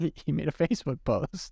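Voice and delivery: giggly, laughing through the words. Starting to tell a funny story about a council member's post, giggling while talking. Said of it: "sorry, I'm giggling already".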